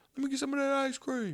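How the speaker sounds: imitated yelling. Retelling calling to his wife from another room: retelling a yell. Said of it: "I was yelling at her from the other room".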